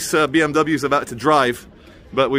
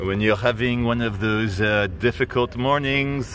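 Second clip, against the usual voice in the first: English spoken with a put-on French accent; 3 semitones lower, 4 dB quieter than usual. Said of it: "why am I doing a French accent?".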